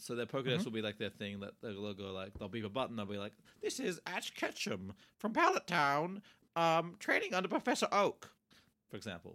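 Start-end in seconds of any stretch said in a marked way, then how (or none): 3.6-8.3 slow, device-like gadget readout voice. Acting out a trainer's device reading out their license: Pokedex voice. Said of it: "I did my best Pokedex voice".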